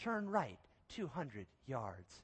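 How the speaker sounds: soft, sultry satellite navigation voice. Describing car satellite navigation and imitating its directions, sultry sat-nav voice. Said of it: "in a nice sultry voice".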